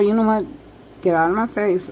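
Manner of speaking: ordinary delivery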